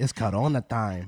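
put-on Mexican accent. Showing how a phrase sounds said another way: Mexican accent. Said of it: "in a Mexican accent".

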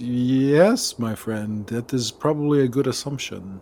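somewhat puzzled, musing, quizzical drawn-out yes. Voicing Diego as he looks over and answers Blue: somewhat quizzical, as Diego. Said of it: "Somewhat quizzical".

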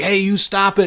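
play-acted, high-pitched hollering yell. Retelling how a guy in a window yells at everybody: imitating someone yelling. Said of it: "he's yelling at everybody".

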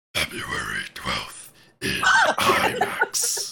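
very deep, low, drawn-out cartoon voice. Reading the next movie clue after a request: Doctor Claw voice. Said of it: "the Doctor Claw voice for the next clue".

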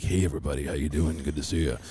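very deep, very low radio announcer voice. The speaker introduces a returning guest, imitating Travis's radio voice. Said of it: "he has the radio voice".

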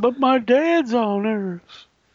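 very high, very slow, drawn-out whine. Repeating the joke line in a whiny Spock voice. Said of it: "That was my whiny Spock".

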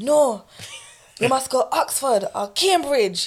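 mock strict, overly aggressive, high pitch, slow. Telling how the father reacted to a younger sister's uni plans: imitating dad aggressively. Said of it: "I'm making him sound much more aggressive".

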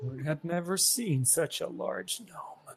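slow, muttered mumble under the breath. A player's character tells his dad about a large gnome; mumbled under his breath. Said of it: "He kind of mumbled it under his breath".

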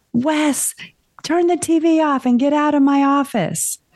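very high, stretched-out, drawn-out yell. Speaker retells what they yelled down the hallway: retelling own yell. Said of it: "And so I yelled".

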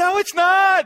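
very loud, shrill, high-pitched shout. A speaker retells answering a political commentator on TV, retelling yelling at the TV. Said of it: "And I'm yelling at the TV".

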